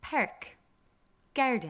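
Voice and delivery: Irish accent, vowels wide and brought forward. Teaching the irish accent, demonstrating broad vowels to learners: irish accent. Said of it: "But in an Irish accent".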